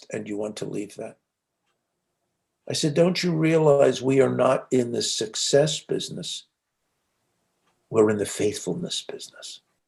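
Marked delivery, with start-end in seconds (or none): 0.1-1.2 very quiet, soft, quick and gentle. Recalling what he asked her after her answer, retelling a gentle question. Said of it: "in as uh, gentle a voice as I could muster".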